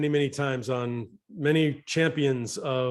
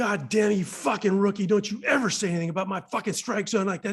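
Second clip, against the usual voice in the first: mock angry, furious yelling, pitched up; 7 semitones higher than usual. Speaker, a rookie, retelling being yelled at over a strike zone: retelling an angry yell. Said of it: "he's yelling at me".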